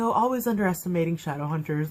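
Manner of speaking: ordinary delivery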